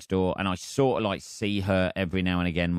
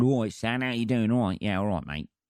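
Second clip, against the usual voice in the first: quick, put-on cockney man's accent; 3 semitones higher than usual. Describing a neighbour's boyfriend who comes round, imitating a cockney accent. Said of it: "a fucking cockney boyfriend who comes round".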